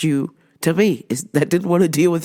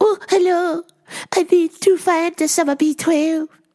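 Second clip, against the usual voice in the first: very high-pitched voice; 12 semitones higher than usual. Retelling what a customer said, imitating her like Miss Juan. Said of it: "to a T".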